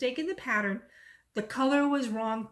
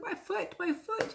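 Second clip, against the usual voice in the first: drawn-out tearful repeating, high, hushed, very slow; 9 semitones higher, 5 dB quieter than usual. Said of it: "And she's crying".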